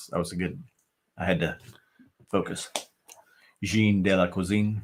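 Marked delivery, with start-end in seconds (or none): 3.6-4.8 focused, careful French-accented pronunciation. Repeating a French name from a chat message in a French accent. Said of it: "you sounded French when you said that".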